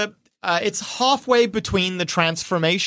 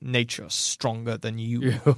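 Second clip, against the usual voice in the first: muttered character voice, lower and quieter; 8 semitones lower, 7 dB quieter than usual. Narrating a game scene as two characters square off; Tapos muttering under her breath. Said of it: "Tapos mutters under her breath".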